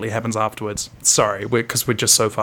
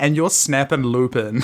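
ordinary talk

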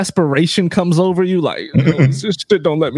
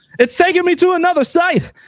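imitated own shouting, higher pitch; 11 semitones higher than usual. Retelling a group call during an online release: retelling own yell. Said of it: "So I yell out".

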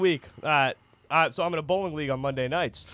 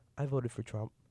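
sudden drop to very quiet, hushed, barely audible; 4 semitones lower, 12 dB quieter than usual. Retelling a friend's reply about his vote: imitating someone going quiet. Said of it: "he gets real quiet and goes".

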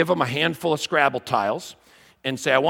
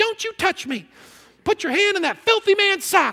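very high, fake, put-on girly voice. Telling a story, speaker voices his wife's reply to him in a put-on girl voice. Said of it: "I have limited girl voices".

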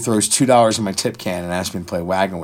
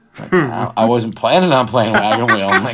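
usual speaking voice

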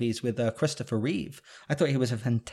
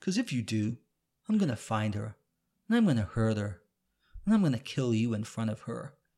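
cold, emotionless, menacing voice. Quoting a villain's threat from a film: cold, emotionless Owen Davian voice. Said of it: "he just says it so cold with no emotion".

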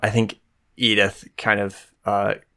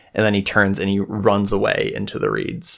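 plain

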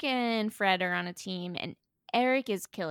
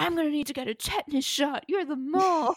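screaming, higher pitch; 6 semitones higher than usual. Retelling how Corbin turned on a teammate: imitating someone screaming. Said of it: "And he's screaming".

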